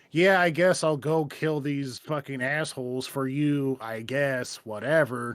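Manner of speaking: put-on sarcastic jerk voice. Imitating the jerk version of Deacon taking a job: imitating asshole Deacon, sarcastic. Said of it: "an asshole deacon's like".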